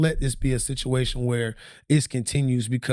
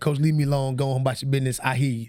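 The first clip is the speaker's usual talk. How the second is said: plain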